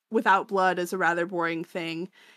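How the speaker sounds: usual speaking voice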